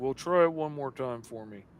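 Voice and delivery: acted, self-satisfied, smug know-it-all, soft, condescending voice. Retelling what the IT guy said after a failed fix: imitating a smug IT guy. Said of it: "that smug little I T guy's like".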